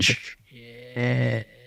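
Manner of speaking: stretched-out, slow, drawn-out alien voice. Retelling a muttered curse, answered that it sounded like e.t.: e.t. voice. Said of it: "You sound like E T".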